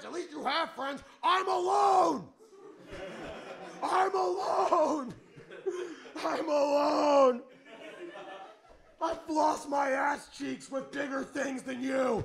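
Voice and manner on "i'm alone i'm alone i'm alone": yelling, very slow, stretched and drawn out. Mocking someone for being even more emo than Iron Man, yelling. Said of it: "Sorry I'm yelling".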